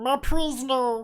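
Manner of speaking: very high, loud, squeaky, dopey cartoon voice. The speaker demonstrates the way they speak, in a stupid cartoony voice. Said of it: "put on my best like uh, stupid uh, cartoony voice".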